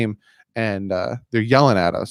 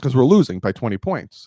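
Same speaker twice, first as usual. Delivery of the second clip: normal talking voice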